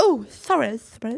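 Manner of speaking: woman's voice, words spoken without teeth. Acting out the scene where the teeth go in: Mrs Doubtfire losing her teeth. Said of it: "that bit in Missus Doubtfire where the freaking teeth".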